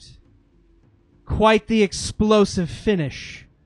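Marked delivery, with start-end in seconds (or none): 1.3-3.4 loud, slow, regal cry. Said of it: "the Queen of Thieves cries out".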